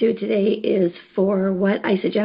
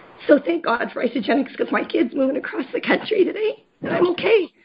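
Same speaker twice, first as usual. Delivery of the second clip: tearful, pitched-up talking through tears, crying; 6 semitones higher than usual. Mother talks about her kid moving across the country today, crying. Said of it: "I know I'm crying".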